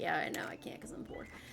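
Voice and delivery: quick quiet whisper.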